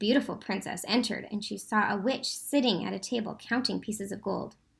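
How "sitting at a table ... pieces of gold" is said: ordinary delivery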